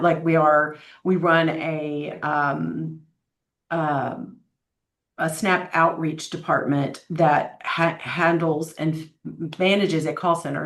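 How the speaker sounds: halting, slow, stumbling, stammered speech. A speaker answering a question about the Alliance's programs: stuttering. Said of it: "Sorry for the stuttering".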